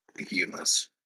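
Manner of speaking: quiet, conspiratorial murmur.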